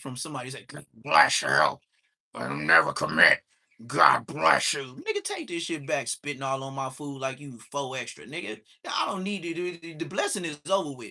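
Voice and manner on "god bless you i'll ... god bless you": very low, very loud, booming frog demon growl. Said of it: "you sound like a f-, a whole frog demon".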